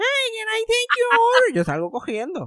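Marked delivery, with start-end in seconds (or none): 0.0-1.5 high, loud, called-out delivery.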